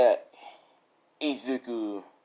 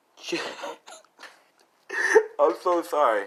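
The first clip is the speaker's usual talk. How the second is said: higher pitch, laughing through the words. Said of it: "I'm sorry if I'm laughing".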